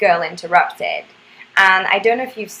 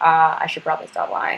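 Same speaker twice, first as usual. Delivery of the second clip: ordinary delivery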